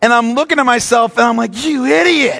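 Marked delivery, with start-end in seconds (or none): 1.6-2.4 high, mock yell. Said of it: "I was yelling at myself in the mirror".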